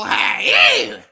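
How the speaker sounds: very high, very loud belted shout. Signing off a sports show, the speaker throws in a hey in Rasputia voice. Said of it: "in my Rasputia voice".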